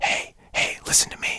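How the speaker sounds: very quiet, airy whisper with lots of breath. Contrasting a held-back stage whisper with an airy whisper. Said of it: "it's not a whisper like this. ... Where you're letting a lot of air pass".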